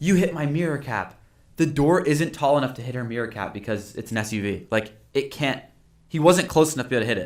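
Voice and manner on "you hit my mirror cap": put-on sharp accusing scream, pitched up, held small. Retelling a customer at a parked car: imitating someone screaming. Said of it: "starts screaming at the guy".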